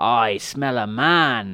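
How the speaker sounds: very slow growling troll woman voice, "man" drawn out. Narrator reading a troll wife's line as she goes into the cave, growling. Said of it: "she growled".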